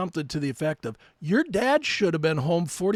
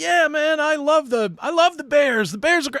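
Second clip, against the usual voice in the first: put-on upbeat voice, kept very high and loud; 10 semitones higher, 5 dB louder than usual. Telling a story about a man, the speaker acts out his talk: imitating an upbeat voice. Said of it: "His voice was up the whole time".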